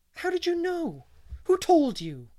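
very high, loud, let-down, disappointed outcry. Someone finds her big news already guessed, crying out disappointedly. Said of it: "cried Anne disappointedly".

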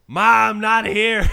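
high, booming, shrill, stretched-out yell. Reviewing a bonus segment, speaker quotes a character yelling to his mom: retelling a yell. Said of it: "He immediately yells".

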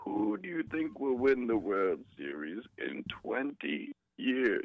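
creepy, horrifying fake voice, swooping high. A caller to the show repeats a question to the hosts, in a horrifying disguised voice. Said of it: "That voice was horrifying".

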